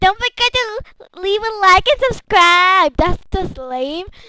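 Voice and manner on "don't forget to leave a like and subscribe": sneering, mocking, pitched-up voice. Mocking other YouTubers who always end their videos: mocking imitation of YouTubers. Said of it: "those mean other YouTubers that are always like".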